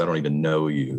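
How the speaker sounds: ordinary talk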